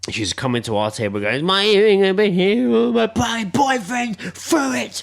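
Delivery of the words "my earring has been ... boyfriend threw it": mock very high, slow, teary drunken sobbing. Retelling a woman at the next table who lost her earring: imitating a drunk woman crying. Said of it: "she was crying she couldn't find her earring".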